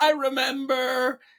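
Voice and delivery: acted, very high-pitched, freaked-out cry. Retelling their mother's words while in labor, imitating her freaking out. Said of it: "And she's like freaking out".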